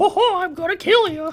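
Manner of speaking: very high, loud, squeaky cartoon voice. Voicing a very angry Toad he made, in a Mickey Mouse voice. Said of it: "That's a Mickey Mouse voice".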